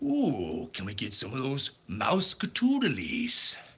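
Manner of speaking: cartoon villain voice, swooping pitch, slow and drawn out. Running through cartoon character impressions, doing a Pete impression. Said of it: "that's my Pete impression".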